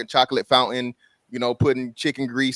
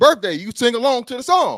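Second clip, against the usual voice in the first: mock aggressive man voice, higher and louder; 12 semitones higher, 5 dB louder than usual. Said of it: "He get aggressive".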